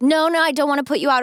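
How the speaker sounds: unsure, hesitant, reluctant and polite. Retelling an old man turning down a ride: imitating a hesitant refusal. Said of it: "And he was very hesitant".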